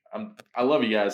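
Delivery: ordinary delivery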